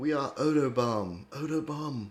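put-on German accent. Joking about a band name, the speaker announces it in a German accent. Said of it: "You got to say it in that German accent".

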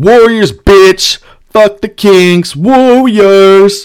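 rowdy, loud, high-pitched screaming. Recounting being escorted out past the other fans, retelling a scream. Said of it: "And I was just screaming".

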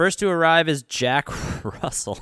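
words said through laughter, pitched high. Introducing a film's funeral scene on a show, laughing while saying it. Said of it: "I just can't say it without laughing".

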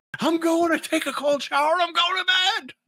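very high-pitched, angry flipping-out outburst. Recapping a scene where a man flips out and leaves, mock flipping out. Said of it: "He flips out and leaves".

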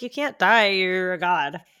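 ordinary talk

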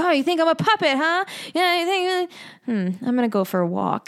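worked-up, huffy voice. Retelling how a film character reacts to a voice: imitating someone upset. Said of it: "he gets all upset".

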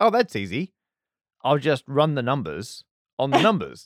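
ordinary delivery

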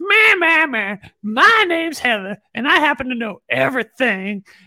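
mocking put-on voice. As part of a running joke, a host pretends to be Heather, doing an impression of Heather. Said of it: "the perfect impression of Heather".

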